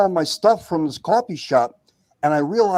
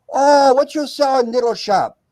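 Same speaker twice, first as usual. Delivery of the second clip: terrible fake broken-English accent, pitched up; 7 semitones higher than usual. Retelling the family asking about the speaker's little shop; terrible put-on accent. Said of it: "pardon my terrible accent".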